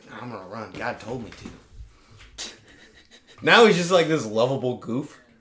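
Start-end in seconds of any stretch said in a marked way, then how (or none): 0.2-2.5 put-on southern drawl. Imitating George W. Bush, weird Southern accent. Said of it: "He's like".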